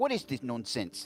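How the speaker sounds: put-on mock London Cockney accent. Playing along with others doing cockney accents, the speaker talks in a cockney accent. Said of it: "pissing off a lot of British people".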